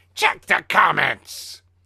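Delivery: very loud, rough villain growl. Reading a meme caption aloud, in a Skeletor voice. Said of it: "I should do that in Skeletor's voice".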